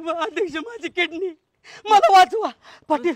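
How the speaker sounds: frightened, afraid voice. Calling out to the chairman and Patil to save him, frightened. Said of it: "का रे घाबरला".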